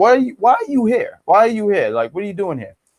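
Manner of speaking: mock bothered, displeased, upset tone. Retelling a wrestler's complaint again: imitating someone upset. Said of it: "But he was just upset, like".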